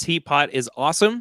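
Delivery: ordinary talk, nothing marked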